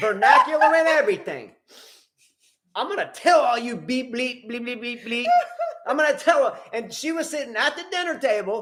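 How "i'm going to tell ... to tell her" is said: spirited, lively acted-out rant with bleeps. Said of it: "quote, lively".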